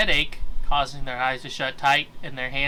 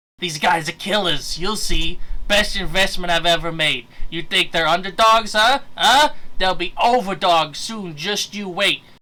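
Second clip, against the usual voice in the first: put-on small, greasy little man's voice; 4 semitones higher, 5 dB louder than usual. Voicing a small greasy man boasting about his team: Danny DeVito voice. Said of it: "I gotta try to do the voice".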